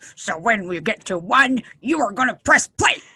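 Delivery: growly, grouchy voice with rising pitch. Counting the others down to press play on the music, grumpy voice. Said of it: "I'm gonna count it down grumpy".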